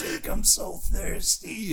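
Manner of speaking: very slow brute voice, every word dragged out. Retelling a sick brother at the top of the stairs: Mickey Rourke as Marv voice. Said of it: "he sounded like fucking Ricky, Ricky, Mickey Rourke".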